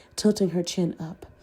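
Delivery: ordinary delivery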